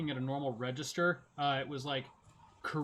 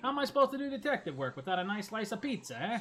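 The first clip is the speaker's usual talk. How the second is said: put-on New York detective accent, pitched up; 5 semitones higher than usual. Joking along with a game scene: put-on new york accent. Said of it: "that guy's got a true blue New York accent".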